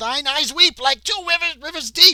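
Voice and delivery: shouting creature voice. A game narrator voicing one of the attacking creatures, shouting creature. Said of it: "one of them shouts out".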